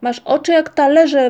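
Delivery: loud, high-pitched, screamed yell in accusing tone. Ryjek speaks to Moomintroll, whom the others doubt, yelling. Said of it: "wrzasnął Ryjek".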